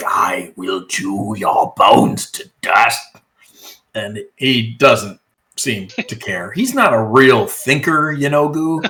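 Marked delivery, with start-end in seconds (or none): 0.1-3.0 deep, low, growling monster voice. Describing a caged creature's reply to you, in a growling Yanogu voice. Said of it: "he just growls. He's like".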